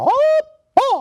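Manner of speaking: high cartoon mouse voice. A voice actor who has voiced Mickey for years demonstrates the Mickey Mouse voice. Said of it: "I've been making a living going".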